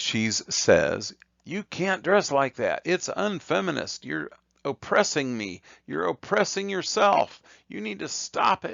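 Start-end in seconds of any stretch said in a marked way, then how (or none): 1.4-8.7 very high, swooping, scolding yell. Describing a cartoon woman scolding one side: imitating someone yelling. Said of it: "this is how she's yelling at it".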